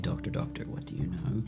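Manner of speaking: muttering very quietly. As the group gathers, a character mutters to himself, muttering very quietly. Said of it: "Sol just mutters very quietly".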